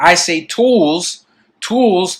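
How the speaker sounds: heavy stress on tools.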